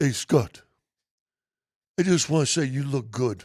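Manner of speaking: imitated heavy, broken Serbian-accented English. Retelling a backhanded compliment from someone's big brother, broken Serbian accent. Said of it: "his broken Serbian ac- accent".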